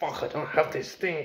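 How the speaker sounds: put-on angry complaining. Retelling past pessimistic thoughts about lacking things: imitating own past angry self. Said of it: "And I used to be like".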